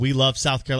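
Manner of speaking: ordinary talk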